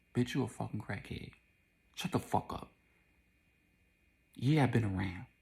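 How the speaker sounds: menacing, taunting, threatening stage whisper. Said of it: "whispering it to her".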